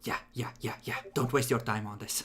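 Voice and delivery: whispering. Voicing a character in the game: whispering. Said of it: "just whispers".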